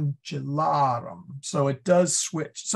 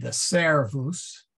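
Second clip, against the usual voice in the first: servus with stress on first syllable ser; 2 semitones lower than usual. Latin lesson on shifting word accent: stress on SER in servus. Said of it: "the accent's on the SE".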